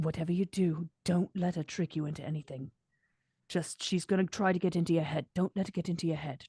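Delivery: hushed, close-in half-whisper. Playing a character leaning in to another's ear: half-whispering in character. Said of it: "whisper in his ear".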